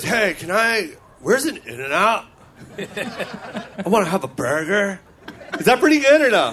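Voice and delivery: mock American Los Angeles surfer accent. Speaker imitating how another person would do an American accent, in a mock surfer accent. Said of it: "I'm acting like an Australian acting like, like a Amer- New Zealander in, in L.A. being a surfer".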